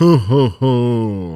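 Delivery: very jolly Santa laugh. Doing a best Santa ho ho ho when asked: very jolly ho ho ho. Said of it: "Very jolly".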